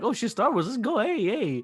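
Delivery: high-pitched, hyped-up, excited cheer.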